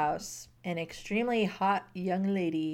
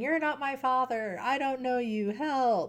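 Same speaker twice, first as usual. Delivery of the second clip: put-on child's yelling outburst, screaming; 6 semitones higher than usual. Retelling a book scene where a kid screams at a stranger: imitating a kid screaming.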